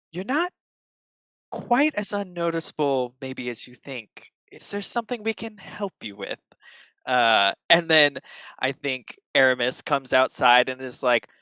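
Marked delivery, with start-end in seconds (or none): 0.1-6.3 hushed, high, soft half-whisper. A narrator voices a recognized voice speaking inside the listener's head, half-whispering. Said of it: "kind of whispers into your head".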